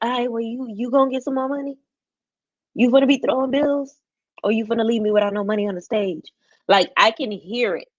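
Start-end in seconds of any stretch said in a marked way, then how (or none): 0.0-6.3 slightly raspy, quickly rattled-off delivery. Imagining how a woman from another season would say it, imitating Lex's slightly raspy voice. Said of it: "you know her voice a little raspy".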